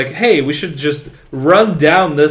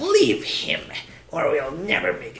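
breathy, urging stage whisper; 3 semitones higher, 10 dB quieter than usual. Quoting a film scene in a Palpatine voice. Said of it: "my Palpatine impression".

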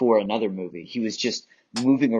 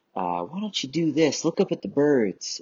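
put-on Texan accent, Southern US speech; 4 semitones higher than usual. Quoting a whimsical director giving actors an offhand note, in a texas accent. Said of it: "he'll say in his Texas accent".

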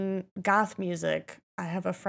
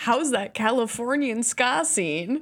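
pointedly sarcastic, knowing tone; 3 semitones higher than usual. Asking the other speaker about the californian ska scene: sarcastic. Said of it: "I'm being so sarcastic".

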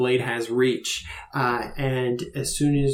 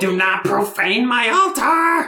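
screeching creature voice, much higher and louder; 11 semitones higher, 6 dB louder than usual. Voicing a creature that confronts another player, in a screeching creature voice. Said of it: "It screeches at you".

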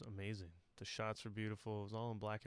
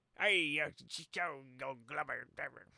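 bad put-on old sea captain voice, higher, louder; 5 semitones higher, 7 dB louder than usual. Describing how the characters in a movie sound: bad old sea captain impression. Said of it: "really bad impression".

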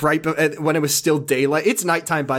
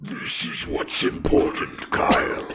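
ASMR-style character voice. Doing a requested line in a Steppenwolf voice. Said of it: "can you do me a favor and just in Steppenwolf say".

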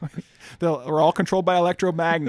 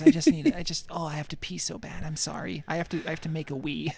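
mock choked-up child voice, quieter; 5 dB quieter than usual. Acting out a kid who is trying to hold back tears. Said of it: "he's trying to hold it in".

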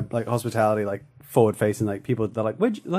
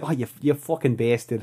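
very strong, put-on Boston accent. Quoting a line from the sketch: Boston accent. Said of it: "It's a very Boston accent".

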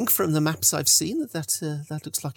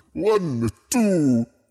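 loud, imperious, looming vampire lord voice; 5 dB louder than usual. Telling listeners what they hear in their heads, counting: Strahd von Zarevich voice. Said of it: "you can hear the voice of Strahd von Zarevich going".

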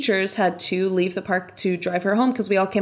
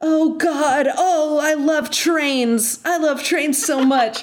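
mock high-pitched shouted outburst; 7 semitones higher, 4 dB louder than usual. Retelling a scene where a man on a train shouts, imitating a shout. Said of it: "he shouts".

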